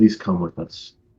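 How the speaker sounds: soft, hushed whisper under the breath. Asking in character for someone to come with them: whispering. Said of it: "I'm just gonna whisper".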